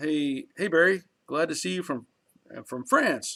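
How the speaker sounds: ordinary talk, nothing marked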